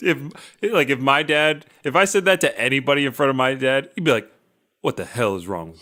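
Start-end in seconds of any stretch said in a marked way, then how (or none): 4.8-5.8 low, quick voice with a shaming tone. Speaker imagines his dad reacting to him saying that, mock shaming dad tone. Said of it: "It's the shame tone".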